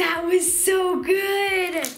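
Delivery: loud, high, very slow, drawn-out gasp. Watching a slime swirl and reacting out loud: gasping.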